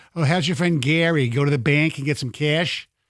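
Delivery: put-on Michigan-accented speech. Repeating how camp kids made fun of your daughters, imitating a Michigan accent. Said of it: "the way they say the A's".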